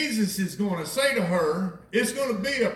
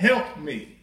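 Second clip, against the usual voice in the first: imitated tearful, crying voice, lower; 4 semitones lower than usual. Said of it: "She comes to the Lord crying".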